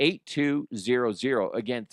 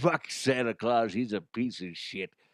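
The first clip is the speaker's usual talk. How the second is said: cigar-in-mouth voice, slower; 3 dB quieter than usual. Showing what the disgruntled elf character would sound like, Frank the disgruntled elf voice. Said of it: "Frank the disgruntled elf".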